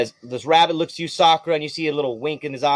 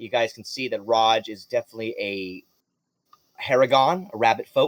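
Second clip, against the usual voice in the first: plain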